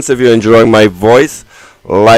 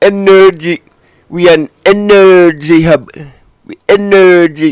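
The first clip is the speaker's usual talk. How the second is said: put-on pitched-up Indian accent; 6 semitones higher than usual. Reacting to another speaker's remark, repeating it in an imitated indian accent. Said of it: "Don't you just love that Indian accent?".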